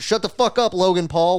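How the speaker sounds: high, blurted-out, straight-up outburst shout. Retelling yelling at Logan Paul on screen during a movie: retelling a shout. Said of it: "I straight up shouted like".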